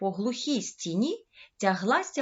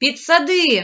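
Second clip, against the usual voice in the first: full-throated, very loud, high shout; 5 semitones higher, 11 dB louder than usual. A boy who can't reach a ladder calls to a taller boy, shouting. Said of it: "крикнув він Толі".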